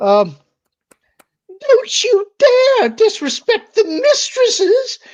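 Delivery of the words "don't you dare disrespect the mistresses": very high, loud, slow, squeaky shrieking elf voice. Playing Dobby aiming a wand at the panel, in a Dobby voice. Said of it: "Dobby voices".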